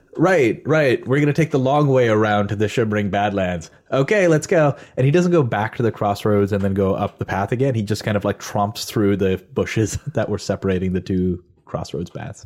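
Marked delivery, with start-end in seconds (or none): 0.2-4.8 pointed, showy, performed announcing tone. Narrating a game scene where Waleed announces the route: Waleed speaking too loudly. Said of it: "Waleed loudly, a little too loudly, says".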